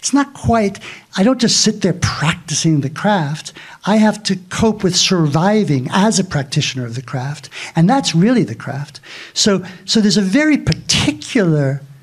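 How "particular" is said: emphasis on 'particular'. Explaining a point about the craft, emphasizing the word particular. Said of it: "I'm emphasizing the word particular".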